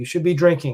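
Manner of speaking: usual speaking voice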